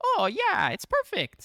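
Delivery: very high, loud, sing-song, slowly swooping, drawn-out cry. Retelling a cameo line from the movie, in the Mario voice. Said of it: "in the Mario voice".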